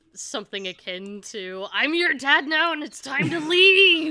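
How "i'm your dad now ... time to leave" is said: booming, very loud, high bellow. Player's character Max runs back carrying someone and bellows: bellowing. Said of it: "Max is gonna bellow out".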